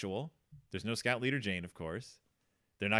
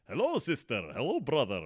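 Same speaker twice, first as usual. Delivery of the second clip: swooping, fake Transylvanian vampire accent. Describing a talking bat character, quote him in a faux Transylvanian accent. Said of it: "he has like this faux Transylvanian accent".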